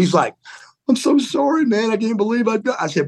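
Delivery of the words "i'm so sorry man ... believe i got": put-on tearful voice, higher. Retelling an apology made while holding a towel on a bleeding head: imitating crying. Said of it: "He's crying".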